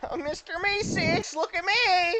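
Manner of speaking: high, loud, slow goblin voice. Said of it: "All the goblins say".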